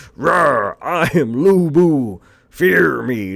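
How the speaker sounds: very slow, hammy, cheesy English dub voice. Mocking how a game's English dub voices a twenty-foot warrior: Lu Bu English-dub voice. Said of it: "the way his English dub sounds like".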